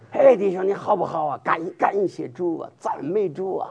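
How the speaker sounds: Mandarin with a Henan dialect accent. Showing how you greeted the brothers and sisters, in a Henan dialect accent. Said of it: "用河南国语啊".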